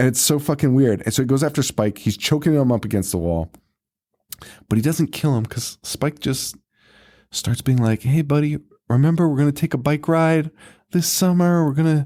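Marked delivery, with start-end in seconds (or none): 8.0-12.1 friendly, coaxing, sweet-talking voice. Retelling a movie scene, imitating Spike sweet-talking. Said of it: "talking sweet to Hoax".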